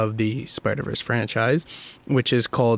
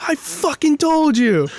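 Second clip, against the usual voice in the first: top-of-lungs scream, much higher, slower; 5 dB louder than usual. Recounting yelling at a roommate after a prediction came true, retelling a scream. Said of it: "I literally screamed at the top of my lungs".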